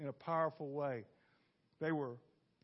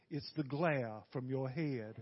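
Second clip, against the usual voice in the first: put-on Southern accent with stretched-out vowels; 3 semitones lower than usual. Retelling an elderly lady's words after a service: imitating a southern drawl. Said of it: "she had a real southern drawl".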